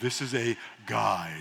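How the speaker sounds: very low, hushed late-night radio host voice. Teaching an audience about prayer, putting on a late-night radio voice. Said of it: "I'm getting my late night radio voice".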